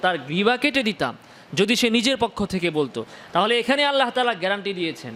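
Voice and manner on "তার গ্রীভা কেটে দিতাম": plain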